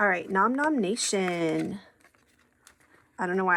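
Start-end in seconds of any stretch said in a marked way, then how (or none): 0.3-1.8 slow, drawn-out call. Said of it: "I have to say it like that every time".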